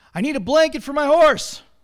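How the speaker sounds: loud, impatient grumbling. A stranger answering a shop owner who offered help, grumbled impatiently. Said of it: "grumbled the stranger impatiently".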